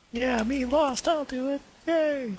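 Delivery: very high, piping, squeaky voice. Imitating another speaker, Lost, in front of the group: imitating Lost. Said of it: "Do I sound like that?".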